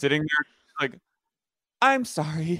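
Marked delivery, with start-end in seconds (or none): 1.8-2.6 put-on upset, lonely voice, higher pitch. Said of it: "the tone in that voice".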